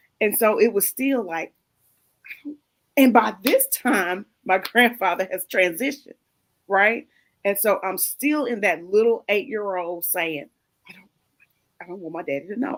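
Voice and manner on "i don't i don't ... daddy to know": fast, rushed, hushed half-whisper. Retelling what the speaker said at eight years old: retelling in a half-whisper. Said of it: "I'm whispering".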